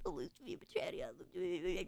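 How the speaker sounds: slow whispered mutter under the breath. Retelling how they said a name to classmates: imitating muttering under breath. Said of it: "under my breath".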